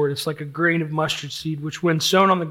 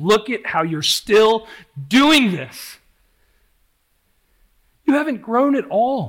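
loud, high-pitched, hard condemning, fault-finding accusing voice; 6 semitones higher, 5 dB louder than usual. Showing what the devil's voice says to someone who gives in to sin: the Devil's voice. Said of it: "the devil's voice will say".

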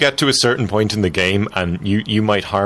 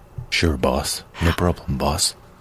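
low, slow drawling voice; 6 semitones lower, 3 dB quieter than usual. Asked to do the rest of the podcast that way, agree in a low slow voice. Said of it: "that low slow voice".

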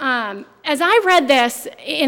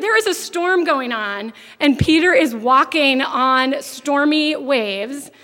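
usual speaking voice

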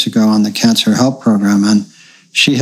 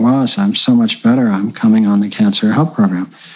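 plain

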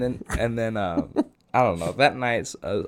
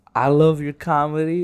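put-on pitched-up girl's voice, her natural way of talking; 5 semitones higher, 4 dB louder than usual. Retelling what a girl said after a show, imitating how she talks. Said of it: "That's how she talks".

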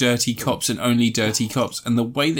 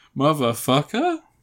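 "motherfucker" lifted at the end, questioning tone; 2 semitones higher than usual. Imitating Samuel L. Jackson saying his catchphrase, rising on motherfucker like a question. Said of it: "sounding like it has a question mark on the end".

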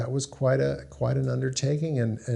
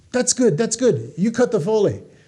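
very high, loud, thick put-on Hungarian accent; 9 semitones higher, 5 dB louder than usual. Retelling what a sound editor boss said: imitating a thick Hungarian accent. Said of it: "With a thick Hungarian or Czechoslovakian accent".

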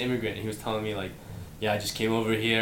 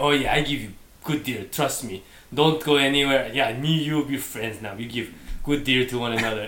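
put-on Middle Eastern accent; 2 semitones higher, 5 dB louder than usual. Quoting the guys the speaker visits to get a deal, mock Middle Eastern accent. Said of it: "Is that your Middle Eastern accent?".

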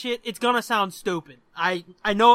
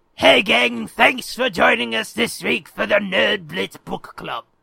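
mock sinister villain voice; 3 dB louder than usual. Reading the show intro from a card: Darth Sidious voice. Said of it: "I was trying to do Sidious".

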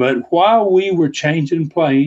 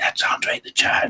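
put-on whisper, quieter. Retelling how a crowd talked near a sleeping man: imitating whispering. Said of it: "They're whispering to each other".

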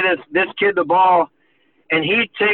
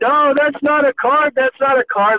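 play-acted, high-pitched screaming yell; 8 semitones higher than usual. Retelling relatives screaming from behind the goal line: imitating someone screaming. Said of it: "they're screaming".

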